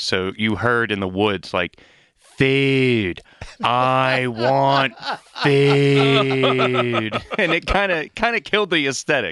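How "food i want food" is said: put-on very slow, spooky, thick Pittsburgh accent, food stretched. Retelling an employee playing a scary figure in the woods, thick Pittsburgh accent, mock-scary. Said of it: "a very thick Pittsburgh accent trying to be scary".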